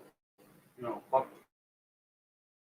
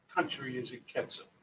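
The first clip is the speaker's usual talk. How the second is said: ordinary talk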